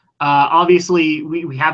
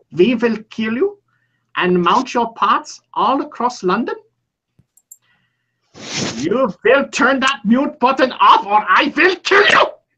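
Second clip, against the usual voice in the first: put-on evil vampire German accent, pitched up; 8 semitones higher than usual. After watching a lot of Helsing, threaten the listener in an evil vampire Nazi accent. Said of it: "my evil vampire Nazi accent".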